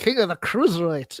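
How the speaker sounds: just a slight put-on Scottish accent. Showing the little accent work they can do: limited Scottish accent. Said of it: "about as much as I can get out of Scottish".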